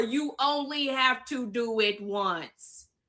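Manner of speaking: slow, deliberate, drawn out word by word. Speaking to her critics, repeating her point: said slower. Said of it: "I'm gonna say it slower".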